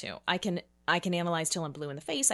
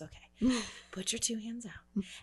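gentle, gorgeous, calm, soothing tone; 4 semitones higher, 4 dB quieter than usual. Retelling a moment walking down the stairs, imitating Shanna's soothing voice. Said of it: "soothing voice she has".

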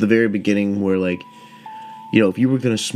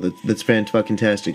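usual speaking voice

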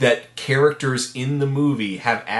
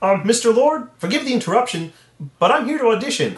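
puppet-style voice, pitched way up; 10 semitones higher than usual. Acting an audition scene in a Hollywood producer's office: Kermit the Frog voice. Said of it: "let me get into character".

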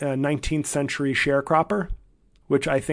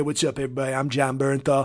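put-on southern California accent. Show how the actor introduces himself to everybody, in a Jon Bernthal Southern California accent. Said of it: "he's got like a real Southern California".

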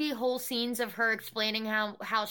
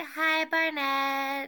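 put-on, babyish little-kid voice; 4 semitones higher, 3 dB louder than usual. Imitating someone greeting barnett in a put-on baby voice. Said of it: "changing her voice to this, like, baby voice".

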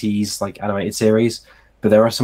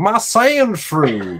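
strong put-on Texan accent, much higher; 7 semitones higher than usual. Describing children's voice acting, voicing a guy with a Sandshrew: strong Texan accent. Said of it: "a very strong, I think, Texan accent".

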